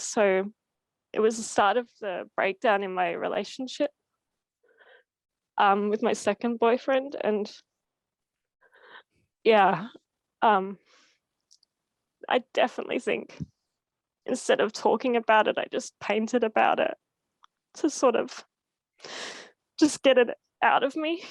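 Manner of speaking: crying, tearful, weeping. Speaker talks about a past relationship breakdown, crying. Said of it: "I'm sorry for crying".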